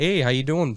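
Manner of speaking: put-on Wisconsin-style Midwestern accent. Showing others how people in Wisconsin sound: imitating a Wisconsin accent. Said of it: "just the accent is super, like".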